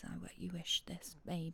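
very soft, unvoiced, seductive teasing whisper.

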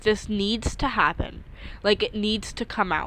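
ordinary talk

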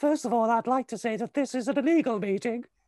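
very high, loud, angry, fired-up voice. Retelling a meeting, the speaker imitates a man who burst in: imitating a really high voice. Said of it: "he had a really high voice".

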